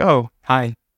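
brief, short, unfriendly, curt delivery. Retelling meeting someone described as not nice: imitating own curt greeting. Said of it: "It'll be shorter".

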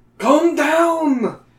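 shrill, very high, loud cry, long and falling. Narrating a voice answering someone who just screamed, crying out. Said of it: "The voice cries".

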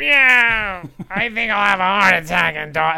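deliberately bad high cartoon voice, drawn-out "yeah". Doing a quick impression in conversation: Gilbert Gottfried voice as Iago. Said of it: "my impression of Gilbert Gottfried".

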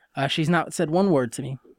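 ordinary talk, nothing marked

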